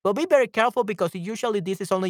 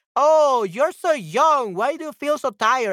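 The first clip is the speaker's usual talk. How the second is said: very sarcastic, slow, high drawl, every word drawn out; 5 semitones higher, 4 dB louder than usual. Showing how a remark about age can sound: sarcastic. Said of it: "It sounds very sarcastic".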